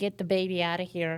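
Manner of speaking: plain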